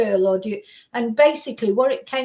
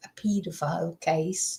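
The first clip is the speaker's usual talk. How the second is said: dropped to a hushed whisper; 6 semitones lower, 8 dB quieter than usual. Recalling cases from his jury service, whispering. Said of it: "I don't know why I'm whispering".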